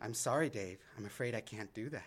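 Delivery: low, soft, hushed computer voice. Explaining an antibiotic named after the film's computer, doing a HAL 9000 impression. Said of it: "That's my best impersonation".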